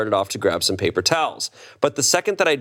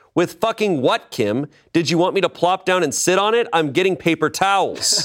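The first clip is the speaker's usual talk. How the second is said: mock, high-pitched, hollered yell; 7 semitones higher than usual. Recounting turning around after Kim called him back; retelling a yell. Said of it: "I turned around and yelled".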